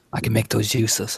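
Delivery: calm whispered character voice. Spotting pistols and a shotgun in the room, Lefty's calm whisper. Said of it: "very calmly and kind of whisper in here".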